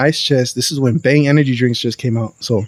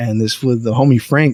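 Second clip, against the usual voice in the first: usual speaking voice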